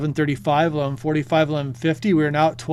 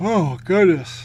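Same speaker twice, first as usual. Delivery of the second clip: words spoken through a yawn; 2 semitones higher than usual. Covering tsunami waves on a live stream tonight, yawning. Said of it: "I'm yawning here a little bit".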